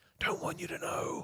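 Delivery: breathy, hushed, very quiet stage whisper. Revealing secrets fitness companies don't want known: whispered. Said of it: "Don't know why I had to whisper that".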